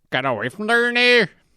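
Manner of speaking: cranky, grumpy snapping, pitched way up. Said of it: "in his voice".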